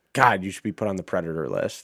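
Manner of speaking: mock muttering under the breath. Retelling a golf video, imitating someone muttering under breath after a bad putt. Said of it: "say something under their breath".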